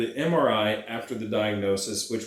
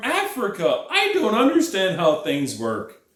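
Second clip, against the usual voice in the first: high, mocking put-on voice. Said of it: "his African's buddy is like".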